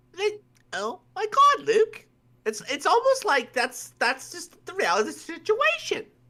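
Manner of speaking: very high-pitched, affected, gushing put-on voice. Acting out a girl's reaction, in a high-pitched voice. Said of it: "Why am I talking in such a high voice?".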